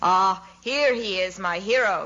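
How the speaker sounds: plain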